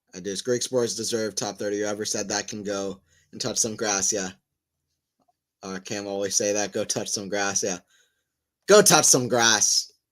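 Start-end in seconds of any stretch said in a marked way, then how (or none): 8.6-9.8 put-on loud, slow botched Australian accent drifting Irish. Repeating a phrase someone always says, in a failed Australian accent. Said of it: "That's not an Australian accent".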